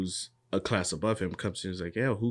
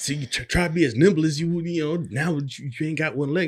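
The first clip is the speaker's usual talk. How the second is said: mock trash-talking jeer, loud and high; 9 semitones higher, 6 dB louder than usual. Retelling an anime fight scene: imitating taunting trash talk. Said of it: "he's talking mad shit like".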